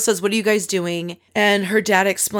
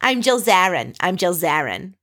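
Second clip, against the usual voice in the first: put-on Long Island accented speech. Retelling a scene where someone mimics Jill Zarin: Long Island accent as Jill Zarin. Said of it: "speaking in the Long Island accent".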